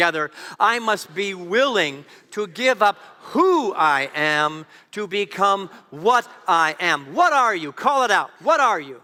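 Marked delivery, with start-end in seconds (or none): 0.6-7.1 slow, powerful, forceful voice full of conviction. Leading the room in repeating a line together: powerful voice with conviction. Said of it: "say that with a powerful voice".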